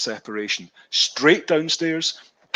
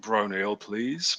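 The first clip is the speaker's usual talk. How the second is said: put-on lowered voice, quieter; 3 semitones lower, 7 dB quieter than usual. Retelling ordering after walking into the wrong bar, a put-on lowered voice. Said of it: "So I lowered my voice and went".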